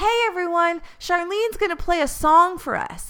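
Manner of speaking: loud announcer-style yell. Retelling how a guy called out to a packed train car: imitating a man yelling. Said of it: "turns to the packed car and yells".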